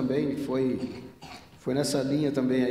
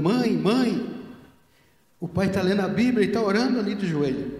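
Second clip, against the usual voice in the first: put-on high, loud child's shout; 7 semitones higher, 5 dB louder than usual. Retelling a child running back to call the mother: imitating a child shouting.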